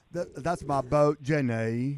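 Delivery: slow voice with every word drawn out. Showing the others an impression: Forrest Gump voice. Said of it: "I do Forrest Gump fairly well".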